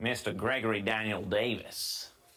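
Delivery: clumsy, bad street-tough New York accent. Trying out different accents, saying a name: bad new york accent. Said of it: "that wasn't a great New York".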